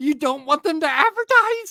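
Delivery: very high, screeching, incredulous voice. Retelling how a man reacted in disbelief: mimicking a screeching voice. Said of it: "His voice is like screeching".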